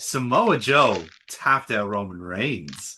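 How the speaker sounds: low, sexy, put-on sultry delivery. Repeating a result when asked to say it again: said even sexier, put on. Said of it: "I can say it even sexier".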